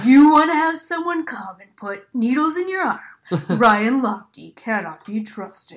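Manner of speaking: loud, ominous, scary ad narrator voice. Joining in on the bit the others did, in a scary negative ad voice. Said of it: "I don't think I have a very good negative ad voice".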